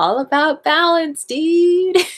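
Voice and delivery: chilled-out stoned surfer voice. Voicing a grinning higher self who calms you down: stoned surfer voice. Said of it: "my higher self is kind of a surfer".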